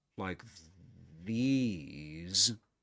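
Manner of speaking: rise-fall-rise tune on "like these". Demonstrating a full rise tone, rise-fall-rise on like these. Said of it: "the voice goes like this, like these. It goes up first, then it goes down, and at the end it goes up again".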